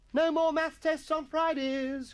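very high, gleeful, joyful shouting cry. A schoolboy dancing around the common room table, crying out joyfully. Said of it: "cried Atkinson, cavorting".

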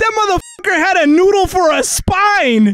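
scared, rattled, freaked-out exclamation, high-pitched. Playing a game on stream and hit by a sudden scare, scared yelling. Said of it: "that scared the fuck out of me".

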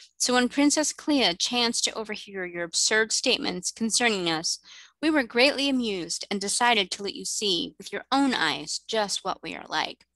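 plain reading voice

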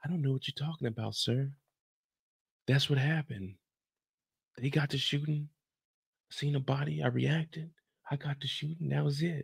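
soft, innocent, butter-wouldn't-melt voice. Recapping a scene where an older man says he sees through Tariq, doing Tariq's innocent voice. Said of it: "Tariq is talking with that innocent voice".

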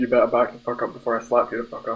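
plain

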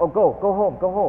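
high, loud shooing call.

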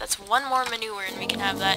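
ordinary talk, nothing marked

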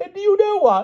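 very high, gleeful, eager, delighted exclamation. Among guests greeting one another, the king goes on, in high delight. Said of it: "went on the king in high delight".

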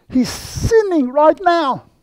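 very high, slow, carrying stage whisper. Retelling how a sister in the back row interrupted: imitating a loud whisper. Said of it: "said in a very loud whisper".

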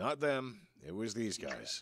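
dwarf character voice, plain and loud. Narrating a scene and voicing a dwarf who answers, booming dwarf voice. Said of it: "the dwarf kind of booms out".

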